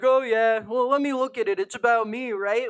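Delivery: put-on snide, mocking, self-absorbed, full-of-herself voice. Mocking a judge who looks at evidence about herself: imitating the judge mockingly. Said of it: "She's like".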